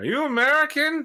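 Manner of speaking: put-on very high-pitched, drunken, boozy voice with Irish accent. Retelling stumbling up to Clyde Shaw and speaking to him: fake drunken Irish accent. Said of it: "but drunkenly Irishly".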